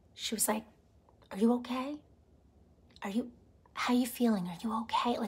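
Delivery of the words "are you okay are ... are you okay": soft, hushed, almost-whispered voice. Retelling how a friend checked in on her: imitating a friend's near whisper. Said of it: "almost in a whisper".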